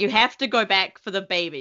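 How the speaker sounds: put-on insistent, pleading screaming. Retelling watching the show, screaming at a character: imitating screaming at a tv. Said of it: "screaming at Mando".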